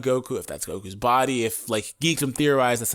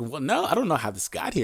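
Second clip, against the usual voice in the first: mock uncomfortable, caught-out, awkward, hesitant delivery; 2 semitones higher than usual. Retelling a cartoon character's reply after being caught: imitating an awkward reply. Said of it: "all awkward".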